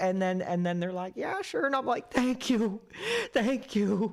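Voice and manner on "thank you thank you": put-on sobbing, gushing, very high and very slow. Retelling thanking Tim Hortons staff for an order, pretending to cry, super thankful. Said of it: "pretend like I'm crying and I'm like super thankful".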